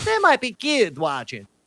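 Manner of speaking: put-on American dialect.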